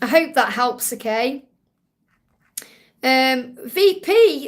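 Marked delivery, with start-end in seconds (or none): 3.6-4.5 voice breaking upward, high and cracking. Speaker thanks a viewer for a donation, voice cracking high. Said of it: "V P went up then, high pitched".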